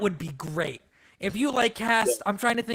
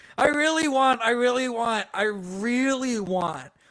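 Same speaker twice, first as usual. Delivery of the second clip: ordinary delivery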